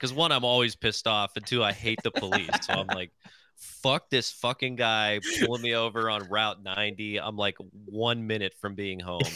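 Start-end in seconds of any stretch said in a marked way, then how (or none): none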